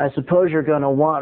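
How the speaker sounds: ordinary delivery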